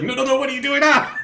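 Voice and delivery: frantic, panicked voice. Being grabbed and stuck into the smoke: [name] freaking out like a spider. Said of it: "like a spider freaking out".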